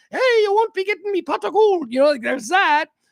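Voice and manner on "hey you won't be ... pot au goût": high, put-on little leprechaun voice. Picturing a costumed party leprechaun talking: put-on leprechaun voice. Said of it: "a dude dressed up in a little green suit going".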